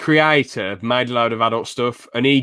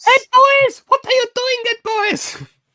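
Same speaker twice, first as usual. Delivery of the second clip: put-on cartoon kid voice, pitched very high; 4 dB louder than usual. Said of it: "you probably have heard Ralph's voice clips".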